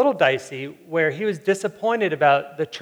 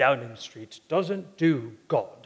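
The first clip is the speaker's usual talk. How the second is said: grave, ominous, put-on British accent; 4 semitones lower, 4 dB quieter than usual. Quoting a media advisor who jumped in before the question on faith was answered: mock-ominous British voice. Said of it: "I have to do that in an ominous British voice".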